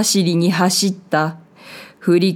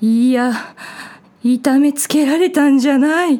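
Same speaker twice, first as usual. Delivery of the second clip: gasping, pitched-up words broken by panting breaths; 7 semitones higher than usual. A frightened man answers someone questioning him, gasping for breath. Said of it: "あえぎあえぎ言葉を継ぎ足した".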